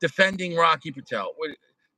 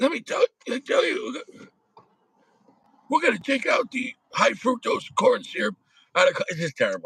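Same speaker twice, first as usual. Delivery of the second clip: higher, halting, stumbling politician voice; 5 semitones higher than usual. Making fun of a public figure on talk of syrup: RFK Jr. voice. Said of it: "Should I do the R F K voice?".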